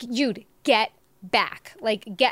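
angry, furious voice. Retelling warning him to back off during a fight: retelling an angry warning. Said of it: "And I kept warning him".

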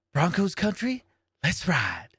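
put-on creepy whisper. Mocking a quarterback's hype line: imitating Russell Wilson whispering. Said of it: "why are you whispering?".

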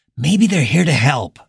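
whispering. Narrator reads Morgan answering Rhonda, whispering back. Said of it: "Morgan whispered back".

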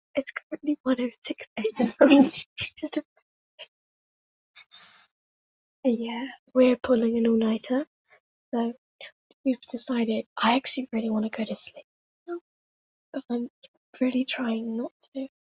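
whispering. Two hosts open their video at 1 am, whispering. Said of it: "why we're whispering".

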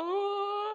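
high, laughing, teasing mock coo. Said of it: "Sam's like".

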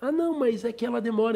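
put-on high young boy voice. Retelling audio messages from young followers on Instagram: imitating a boy's voice. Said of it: "é aquela voz de menino".

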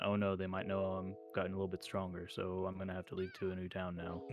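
acted-out bland, lifeless, flat, emotionless monotone. Mocking a show's bland main character: imitating a bland, emotionless hero. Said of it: "like no emotion in his voice, very just".

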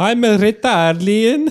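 put-on Italian accent. Improvised train scene, a passenger answering whether they're Italian: mock Italian accent. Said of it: "Are you Italian?".

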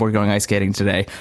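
normal talking voice

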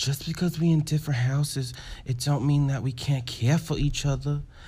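put-on soft, hushed New York accent, gently consoling. Retelling a scene where Angel consoles someone defeated, in a New York accent. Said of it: "I hope that was a good New York accent".

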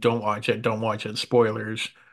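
normal talking voice

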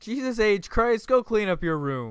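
high-pitched angry father voice, scolding tone. Joking about jesus having a middle name, playing his dad, mock-angry dad yelling. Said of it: "I feel like I'm his dad yelling at him".

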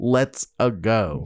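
dead flat tone with no flair. Imitating Chris Pratt saying the trailer line: imitating Chris Pratt's flat line. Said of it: "it's just Chris Pratt saying".

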